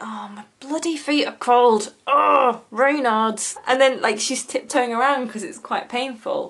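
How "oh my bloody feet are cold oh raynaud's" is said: mock funereal, woe-is-me, slow mournful moan. Acting out a woman complaining of cold feet: imitating a mournful moan. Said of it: "walking around like it's a funeral".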